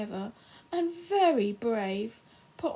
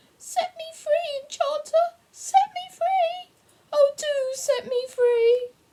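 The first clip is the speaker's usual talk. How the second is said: tiny, squeaky voice, very high-pitched; 7 dB louder than usual. Narrating a voice from inside a kettle pleading with the enchanter; small squeaky voice. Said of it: "From the kettle came a small, squeaky voice".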